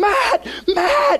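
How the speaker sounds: shrill, very high screamed yell. Retelling how a man up front screamed for Matt, retelling a scream. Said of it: "He screams like".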